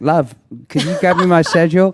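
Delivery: worst-ever fake English accent, high and loud. Retelling a request to his wife in a bad english accent. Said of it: "You have the worst English accent".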